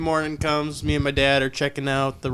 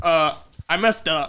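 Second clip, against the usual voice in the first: slow, drawn-out, panicked, freaked-out voice; 3 semitones higher than usual. Retelling a call to dad while stuck on train tracks: retelling own panicked words. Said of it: "I'm, like, panicking, freaking out".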